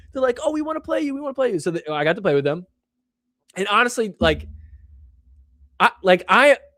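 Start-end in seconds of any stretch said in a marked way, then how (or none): 0.4-1.5 put-on very high, fast, gushing, excited kid voices. Retelling how young fans reacted on recognizing the speaker: imitating excited kids. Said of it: "And they got all excited".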